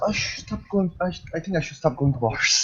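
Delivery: soft mumble, muttered under the breath. Voicing Margrim muttering while dancing: mumbling to himself. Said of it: "Margrim just mumbles to himself".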